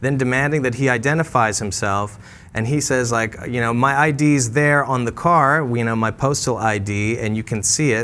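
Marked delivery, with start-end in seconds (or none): none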